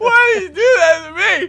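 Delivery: put-on very shrill, loud, high sobbing through tears. Retelling a prank that made the speaker cry: retelling own crying plea. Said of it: "I started to cry".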